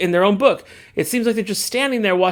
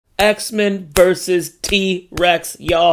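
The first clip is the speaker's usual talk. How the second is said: very slow, deliberate, drawn out word by word. Repeating an exciting comic premise for emphasis, very slow deliberate. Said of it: "I'm gonna say it again real slow".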